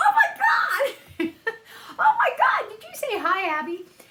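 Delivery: very high, laughing, stunned shriek of disbelief. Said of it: "And I was like".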